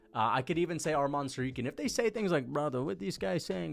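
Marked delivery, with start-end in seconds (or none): 2.4-3.7 put-on Dagestani-style accent. Explaining a phrase used for people who seem Dagestani or Chechen; put-on Dagestani accent. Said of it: "if they sound like that".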